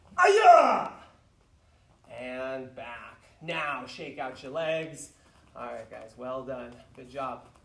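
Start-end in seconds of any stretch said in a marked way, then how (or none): 0.2-0.9 loud, high martial arts kiai shout. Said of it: "Bring it back and yell".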